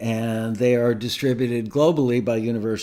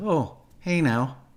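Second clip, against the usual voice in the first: rough, poor celebrity voice; 4 semitones higher than usual. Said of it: "that wasn't a very good imitation".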